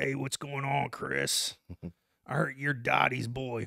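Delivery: put-on growly voice. Retelling how a man from next door first greeted him; imitating a growly voice. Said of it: "he talked with that growl".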